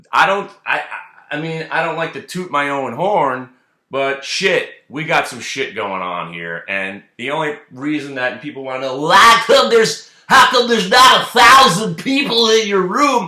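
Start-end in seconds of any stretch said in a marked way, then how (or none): 9.0-13.2 put-on wired comedian voice, higher and louder. Imitating people asking why the room isn't bigger: Bill Cosby on crack voice. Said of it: "I just did Bill Cosby on crack to do that voice".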